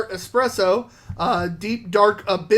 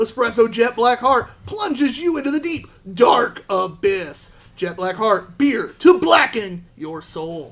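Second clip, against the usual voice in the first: excited, enthusiastic reading aloud, full of gusto. Reading a beer can's description aloud to the others: enthusiastic read. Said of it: "He did do it pretty enthusiastic read".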